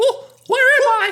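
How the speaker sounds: pitched way up and belted out. Acting out Mickey waking up in a Saw film: Mickey Mouse voice. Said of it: "Can you imagine Mickey wakes up, he's like".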